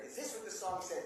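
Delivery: ordinary delivery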